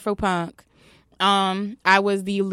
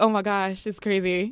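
put-on choked-up, emotional voice. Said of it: "like choking up on the side".

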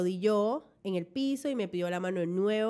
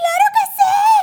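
excited yell, very high and very loud; 17 dB louder than usual. Retelling own answer to a marriage proposal: retelling own shout of yes. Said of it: "y yo nada más grité".

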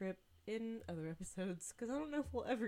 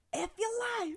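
shrill, very high-pitched yell; 9 dB louder than usual. Retelling what a woman across the street yelled: imitating a woman yelling. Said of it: "this woman on the other side of the street yells".

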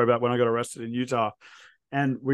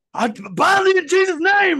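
mock screaming, much higher and louder, full volume; 6 dB louder than usual. Retelling a street preacher on a soapbox in LA, retelling a preacher's screaming. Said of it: "he's screaming at the top of his lungs".

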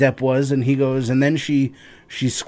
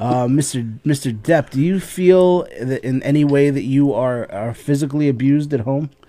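ordinary talk

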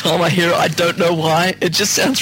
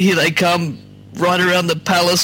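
ordinary talk, nothing marked

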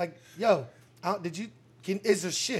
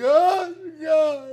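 mock sobbing, much higher pitch, louder; 10 semitones higher, 10 dB louder than usual. Retelling a story, the speaker acts out the cashier in the back, imitating someone crying. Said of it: "She's back there crying".

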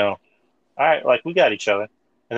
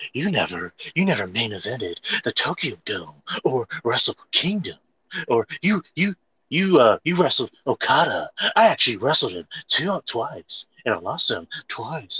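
bland, personality-free, stiff promo voice; 3 semitones higher than usual. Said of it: "he's like".

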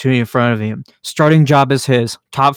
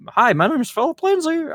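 put-on parakeet-like voice, higher; 4 dB quieter than usual. Imitating Philip Lindsay introducing himself: parakeet-like Philip Lindsay voice. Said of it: "I'm making him sound like a parakeet".

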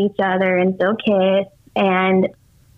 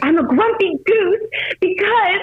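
shrill, very high, angry cross tone; 12 semitones higher than usual. Retelling how she answered back: imitating an angry reply. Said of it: "she answers back so angry".

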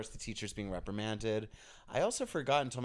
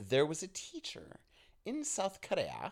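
high, swooping, put-on posh colonial British accent; 8 semitones higher than usual. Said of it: "I didn't have to say it all colonial like that".

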